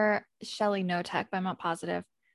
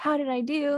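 suddenly lively, animated, pitched-up delivery; 6 semitones higher than usual. Retelling what an interviewee said when she thought the camera was off: imitating someone animated. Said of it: "completely becomes animated and she's like".

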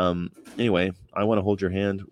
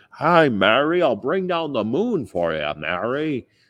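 drawn-out, slow, high, swooping sing-song delivery; 6 semitones higher than usual. Talking about a Frank Capra film, James Stewart impersonation. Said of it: "my James Stewart impersonation".

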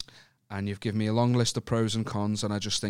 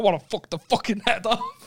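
very high, shrill, loud, aggressive outburst; 11 semitones higher, 5 dB louder than usual. Quoting back the other speaker's line: mocking an aggressive line. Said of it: "You said that so aggressively".

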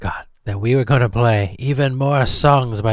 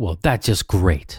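sarcastic tone, lower pitch; 4 semitones lower than usual. Reacting to hearing that the setup can't work: sarcastic. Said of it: "I was being sarcastic".

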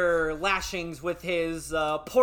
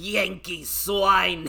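growled in a put-on growling voice. Speaker retells the man they were tussling with growling at them; growled. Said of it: "and growls".

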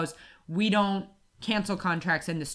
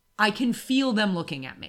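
ordinary talk, nothing marked

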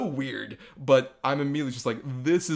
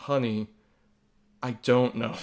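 put-on, slow voice of complete defeat. Retelling what a mom in the corner answered her little girl: imitating a defeated voice. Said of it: "in the most defeated voice I could ever hear".

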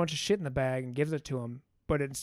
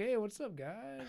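put-on soft, slow, pitched-up stoner drawl; 7 semitones higher, 9 dB quieter than usual. Retelling a scene where the bad guy shows up, imitating Brad Pitt's stoner guy. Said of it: "He plays just the stoner guy".

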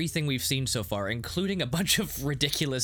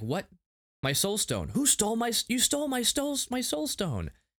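acted, very high, swooping, frantic freaking-out tantrum; 9 semitones higher than usual. Retelling how Ultron reacts to losing his soul stone: imitating Ultron really mad. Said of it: "and he's really mad".

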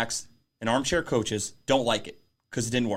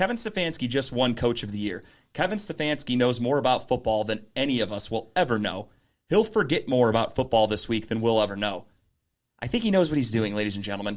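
ordinary talk, nothing marked

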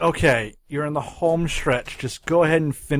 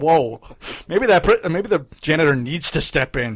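ordinary talk, nothing marked

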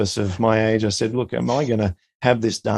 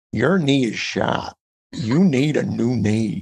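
strongest possible thick, slow American drawl. Retelling how he was told about his knee, in a strong American drawl. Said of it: "the most strongest American drawl".

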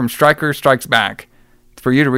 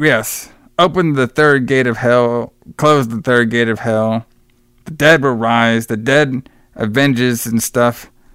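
ordinary talk

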